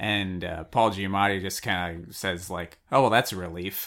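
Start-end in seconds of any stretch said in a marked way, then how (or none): 2.9-3.9 fast, heavily sarcastic delivery. Retelling a story, the speaker quotes someone's reply: retelling a very sarcastic reply. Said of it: "Like very sarcastically".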